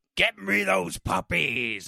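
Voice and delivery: rough, sinister, gravelly cartoon villain rasp. Quoting the evil vet villain from a movie, creepy gravelly villain impression. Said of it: "It's all gravelly".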